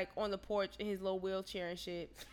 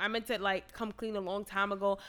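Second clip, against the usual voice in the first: ordinary talk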